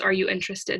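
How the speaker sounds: ordinary talk, nothing marked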